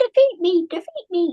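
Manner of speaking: high-pitched, little talking bacteria voice. Speaker voicing bacteria during an antibody explanation, high-pitched bacteria voice. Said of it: "the bacteria don't have a high-pitched voice like that".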